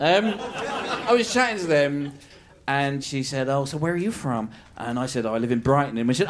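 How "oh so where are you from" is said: fast, clumsy, bad put-on American accent. Speaker quotes an American woman asking where they're from, in a bad American accent. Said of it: "I can't do American accents".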